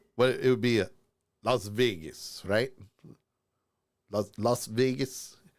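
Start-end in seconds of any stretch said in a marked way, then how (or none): 4.1-5.4 attempted Russian accent. Practicing an accent mid-conversation: attempted Russian accent. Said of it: "I'd have to practice that a little bit".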